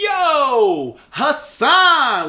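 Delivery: very high swooping yell with the word yo stretched. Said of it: "the loudest".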